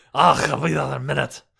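mumbly mock Scottish accent. Repeating the actor's line again: Brian Cox mumbly Scottish brogue. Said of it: "that sounded brogy".

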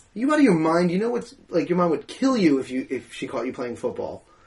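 plain

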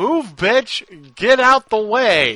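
loud, high, stretched-out, drawn-out yell. Telling a story about a sleigh driver stuck behind an old woman, imitating a character yelling. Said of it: "he yells".

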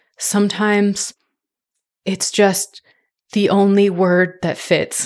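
put-on bone-tired, slow, halting, exhausted voice with breaks. Retelling a dad's reply from under a car: imitating an exhausted dad. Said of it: "he just looked at her so exhausted".

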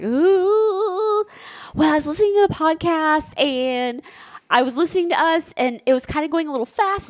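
high, nervous, jittery, with drawn-out ooh. Retelling going upstairs to tell him something: imitating own nervous tone. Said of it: "You came upstairs like so nervous".

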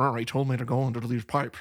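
put-on movie-star Scottish accent. Retelling a movie scene of someone quipping: Sean Connery impression. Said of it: "He does a pretty good Sean Connery impression".

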